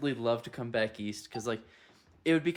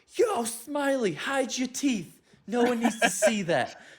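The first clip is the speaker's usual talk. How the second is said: acted very high, loud, stretched, drawn-out yell; 12 semitones higher, 5 dB louder than usual. Retelling a comedian's story of a guy on the street: imitating a guy yelling. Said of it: "And some guy yells".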